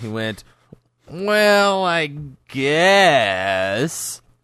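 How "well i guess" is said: play-acted, high, whiny, grudging tone, words stretched out. Retelling how he answered about the $7, in Robbie's whiny voice. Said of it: "he said it in this whiny voice that I remember perfectly".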